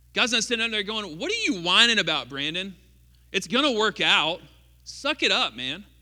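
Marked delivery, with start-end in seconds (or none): 1.1-5.7 put-on offhand, careless, dismissive brush-off. Acting out what God is not saying, mock dismissive. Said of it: "he doesn't trivialize it".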